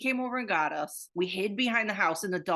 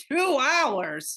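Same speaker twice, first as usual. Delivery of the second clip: play-acted loud, pitched-up booming call; 7 semitones higher, 5 dB louder than usual. Retelling how the listener cut in from behind the woman, booming voice. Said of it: "you and your booming voice behind her goes".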